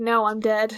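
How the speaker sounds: put-on sassy tone. Retelling how Percy answers Charon's question: imitating Percy's sassy reply. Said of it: "The sass".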